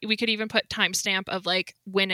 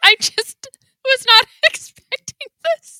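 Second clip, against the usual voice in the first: very high, very loud, giggles breaking up words; 12 dB louder than usual. Reacting to news just revealed by another speaker, laughing while talking. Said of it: "I'm not laughing 'cause it's not funny".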